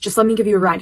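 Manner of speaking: ordinary delivery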